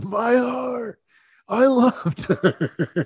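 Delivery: acted anguished yell, very high, slow and drawn-out. Describing a video of a kid in a car, speaker is retelling a kid's yell. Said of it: "He's just yelling".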